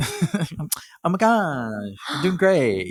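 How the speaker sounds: put-on, high, swooping Valley girl voice. Answering the co-host who asks about the change in voice, in a valley girl voice. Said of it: "I'm not talking like a Valley girl".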